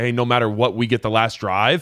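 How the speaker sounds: plain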